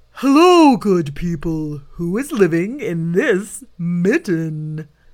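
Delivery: loud, big, booming bear bellow. Narrator reading a story, voicing the bear who finds the mitten, bellowing. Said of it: "he stopped and bellowed".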